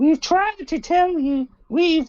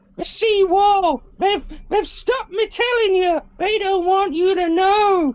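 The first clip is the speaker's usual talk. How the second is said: loud voice calling out; 3 semitones higher than usual. A man in a murmuring crowd calls out to everyone: shouting out. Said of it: "he shouts out".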